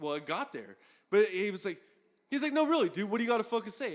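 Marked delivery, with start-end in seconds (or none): 2.5-4.0 angry, pissed-off confrontational voice, pitched up. Retelling what a guy kept demanding of him in an argument, mock-angry demand. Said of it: "he got so fucking pissed off".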